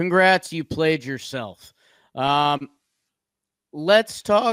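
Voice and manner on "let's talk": voice breaking mid-phrase, cracking up high. A speaker talking baseball moves on to the next team, voice cracking. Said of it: "Whoa, voice crack".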